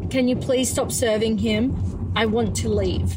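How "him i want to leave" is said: ordinary talk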